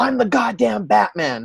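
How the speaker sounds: high, acted-out screaming. Retelling a comic scene where Batman answers a crying kid: imitating Batman screaming. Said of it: "And Batman turns to him and screams".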